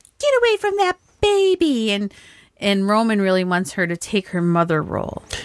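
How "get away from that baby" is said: put-on high, sharp old lady voice. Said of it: "the one lady's just like".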